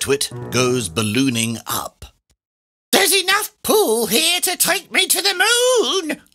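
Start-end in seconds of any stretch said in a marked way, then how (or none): 2.9-6.2 very high cry with "moon" drawn out long. A narrator reads Mrs. Twit as she goes ballooning up, crying out. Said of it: "Twit cried out".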